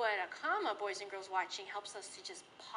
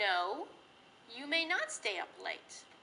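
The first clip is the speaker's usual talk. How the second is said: slow delivery, short pause after the word no. Teaching a comma after an opening no: short pause after no. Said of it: "Notice I paused a little bit".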